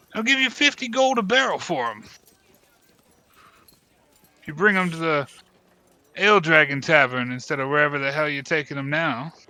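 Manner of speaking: loud shouting, calling out. As the party walks off, a character shouts after them. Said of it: "he kind of shouts behind you".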